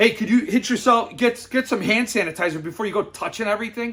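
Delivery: put-on snide, rude, condescending talking-down voice. Speaker retells what the guy behind the counter said as he walked in, mock-rude. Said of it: "He said it just like that".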